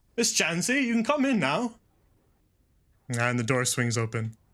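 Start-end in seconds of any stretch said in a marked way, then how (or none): 0.2-1.7 calling out with a raised, very high voice. Captain Hathaway calls Miss Jancy in through the door, raising his voice. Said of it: "raises his voice a little louder".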